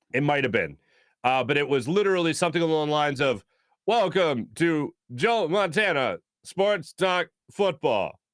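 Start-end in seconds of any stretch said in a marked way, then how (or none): 3.8-8.0 slow, generic, robotic computerised announcer voice. Retelling an old video game's broadcast intro: imitating robotic generic announcer voice. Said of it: "robotic, generic announcer voice".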